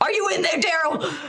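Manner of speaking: furious, high-pitched angry holler. Playing an angry character banging on a door: angry in-character yelling. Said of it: "very pissed off, 'cause I'm still huffing and puffing".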